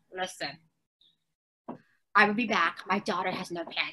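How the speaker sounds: hushed half-whisper under the breath. Retelling half-whispering to the new teachers about pants: retelling a half-whisper. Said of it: "I had to whisper to the new teachers".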